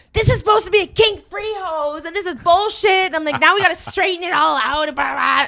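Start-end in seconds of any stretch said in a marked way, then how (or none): 0.1-3.0 very high-pitched, pissed-off, angry shouting. Speaker retells yelling at someone over a tangled hose, retelling a pissed-off yell. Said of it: "I was so pissed off and I was yelling at Adam like".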